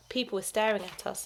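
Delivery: ordinary delivery, nothing marked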